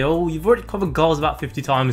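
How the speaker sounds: ordinary talk, nothing marked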